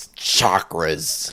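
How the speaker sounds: deepened, smooth voice. Showing how to do the voice after explaining it: lowered Doctor Strange voice. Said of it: "not add any grit to it and just lower it".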